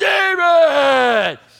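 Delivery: mock rough, high, drawn-out, top-of-the-lungs scream. Retelling screaming after a child running into the parking lot: retelling a scream. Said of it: "I screamed at the top of my voice".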